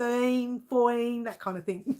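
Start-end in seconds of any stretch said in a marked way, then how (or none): 0.0-1.2 thirteen, fourteen in Australian accent, no T. Counting aloud after a comment about the accent: Aussie way with no T. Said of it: "There's no T".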